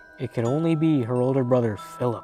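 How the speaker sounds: usual speaking voice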